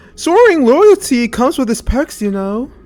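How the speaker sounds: put-on loud, high-pitched poor British accent. Quoting to the audience what Niall says, in a bad British accent. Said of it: "I'm not good with a British accent".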